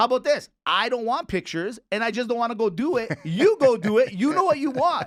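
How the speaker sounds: upset shouting outburst. Answering a co-host about errands while yelling. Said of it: "I don't know why you're yelling".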